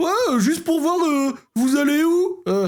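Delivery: thin, piping voice. Imitating an Uber driver phoning a passenger, in a thin reedy voice. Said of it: "il te faisait la voix fluette".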